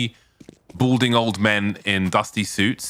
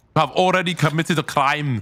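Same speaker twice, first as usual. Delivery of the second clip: put-on German accent on every word, pitched up; 7 semitones higher than usual. Asking the others what they think of your German accent, in a put-on German accent. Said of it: "that's my German accent".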